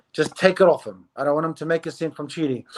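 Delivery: ordinary delivery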